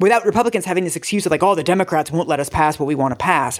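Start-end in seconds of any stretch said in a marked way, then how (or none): 1.4-3.6 put-on old politician voice. Imitating Republicans making excuses about Democrats: Nixon-like voice. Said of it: "I thought you were about to do a Nixon impression".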